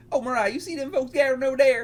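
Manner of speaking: put-on old-man country accent. Speaker tries a woman's country voice but lands on an old man country accent. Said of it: "They're all just have an old man accent".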